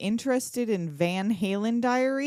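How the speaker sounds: usual speaking voice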